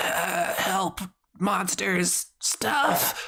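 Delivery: gurgled words, dragging very slow. Voicing a dying, stabbed man who can barely talk: gurgling out words. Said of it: "he's kinda, like, gurgling out".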